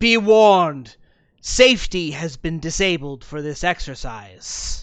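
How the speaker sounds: very loud, booming voice. Voicing an arcane wraith speaking down to apprentices: voicing Archmage Modera's arcane wraith. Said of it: "she notes".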